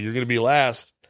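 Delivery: normal talking voice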